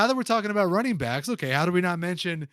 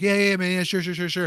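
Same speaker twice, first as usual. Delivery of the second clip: put-on voice of a way-too-drunk man. Comparing someone to a drunk guy at a bar, acting out his reply: imitating a way-too-drunk guy. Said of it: "Like the like the way too drunk dude".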